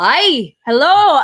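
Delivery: put-on heavy, laid-on Scottish accent, loud. Retelling a stranger answering back while trying to join the meeting, super scottish accent. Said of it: "like super Scottish accent".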